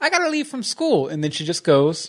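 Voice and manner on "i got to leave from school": very high, squeaky put-on character voice. Recapping a scene where she leaves school, in a Silver impression. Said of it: "this is my impression of Silver".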